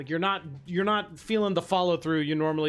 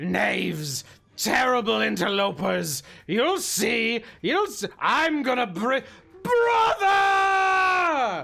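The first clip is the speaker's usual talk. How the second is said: wounded monster, high, slow, shouted, "brother" stretched; 7 semitones higher, 4 dB louder than usual. Voicing a bloodied, wounded beast threatening the party: wounded monster shouting threats. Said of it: "it looks around at all of you and is like".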